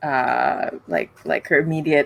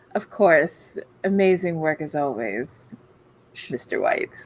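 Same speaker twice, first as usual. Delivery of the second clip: dripping, heavy sarcasm laid on thick; 4 dB quieter than usual. Speaking in character to a companion, thanking him: dripping with sarcasm. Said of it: "with sarcasm dripping all of my words".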